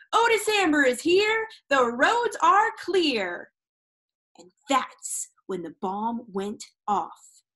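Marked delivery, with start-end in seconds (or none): 0.1-3.5 loud, high, raised yell. A bundled figure comes through the restaurant door stomping snow, yelling. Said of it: "and yelled".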